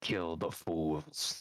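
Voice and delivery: low, growling beast creature voice. Voicing a creature as she comes out on her turn, growling. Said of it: "She growls".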